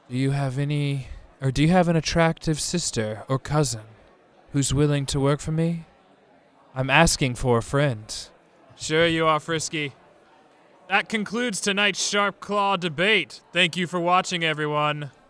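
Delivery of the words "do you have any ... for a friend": put-on sensual voice, close and intimate. Voicing Frisky asking for an attractive sister: talking sensual and close as Frisky. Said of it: "Frisky would try to talk real sensual and close".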